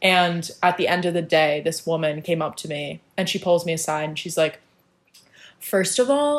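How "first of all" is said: put-on very condescending tone, higher. Retelling what a woman at school said about an outfit: imitating a very condescending tone. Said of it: "in, like, a very condescending way".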